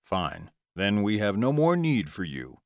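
ordinary talk

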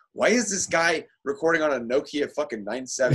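plain

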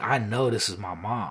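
ordinary talk, nothing marked

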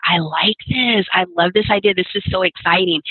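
ordinary talk

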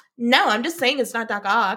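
mock bratty, childish, sassy kid-like tone. Retelling how Lane insisted on his theory: imitating Lane, sassy like a child. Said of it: "freaking sassy like a child".

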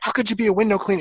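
very high, shrill, irate scolding yell. Retelling how an angry customer scolded about wood floors: imitating a customer yelling. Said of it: "she just totally just went off on me".

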